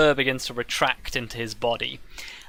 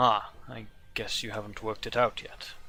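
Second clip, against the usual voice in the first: deep, soft, rumbling bear-man baritone voice; 2 semitones lower, 7 dB quieter than usual. Narrator voicing the bear man as he looks at you quizzically, rumbling bear baritone. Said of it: "Underneath the rumbling bear baritone".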